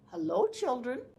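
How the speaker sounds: sugary-sweet, very sweet, high voice. Reading a children's story aloud, a voice greets the children: very sweet voice. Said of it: "said a very sweet voice".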